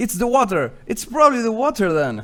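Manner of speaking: acted, high, loud yelling out. Playing a character who blames the water: in-character yelling. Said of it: "I start yelling".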